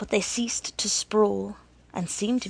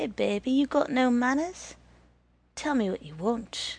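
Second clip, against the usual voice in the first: dreamy, wooing voice; 4 semitones higher than usual. The hat answers Green Eyes as if speaking to a girl, dreamy voice. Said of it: "He spoke in a dreamy voice".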